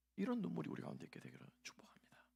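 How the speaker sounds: quiet, creaky whispering.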